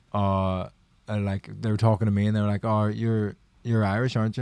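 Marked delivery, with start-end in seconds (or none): none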